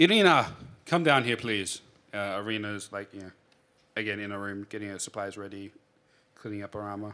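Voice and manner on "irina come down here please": loud, full-voiced, booming yell. A narrator voices Ismark as he calls for Irina: yelling out. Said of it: "Ismark yells out".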